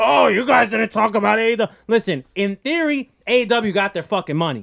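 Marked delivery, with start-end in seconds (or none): 0.0-1.7 rough, creaky, mocking wrestling fan voice. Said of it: "you're gonna start doing that voice from now on".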